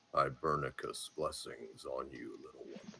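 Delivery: deep, hushed tree-creature voice, low and soft. Dungeon master voicing the lead treant speaking to a player: [name]'s much lower treant voice. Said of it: "will say in a much lower voice to you".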